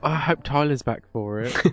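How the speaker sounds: put-on loud, gushing teenage girl voice. Mocking another speaker's comment by repeating it; mock teenage girl voice. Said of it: "You sound like a teenage girl".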